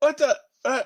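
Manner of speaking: very high, loud, shocked little startled yelp. Narrating the game, voicing a character who looks up and sees the fish, with a little scream. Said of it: "He screams a little bit".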